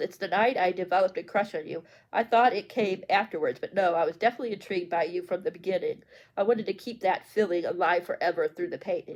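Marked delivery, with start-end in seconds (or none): none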